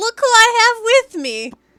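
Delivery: gloating in a character voice. Voicing a player character pulling a head from her satchel: in-character gloating. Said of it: "pulls out Rahadin's head".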